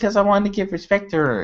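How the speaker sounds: small, very high, little put-on voice. Acting out a wrestler answering her boss: Charlotte voice. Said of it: "in her little freaking Charlotte voice".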